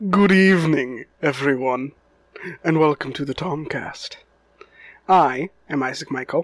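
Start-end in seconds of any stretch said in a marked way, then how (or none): 0.1-4.2 vampire character voice. Host welcoming everyone to the Tomcast and introducing himself: vampire impression. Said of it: "that was my impression of a vampire".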